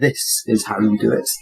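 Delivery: very low, slow, under-the-breath mutter. Giving the order to fire as the character, muttered under the breath. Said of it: "I mutter under my breath".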